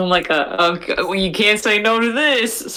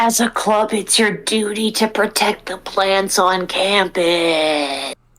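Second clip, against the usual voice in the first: stage whisper, with the word campus drawn out. Speaker cuts in while someone else is doing the talking, stage whisper. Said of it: "I'm whispering".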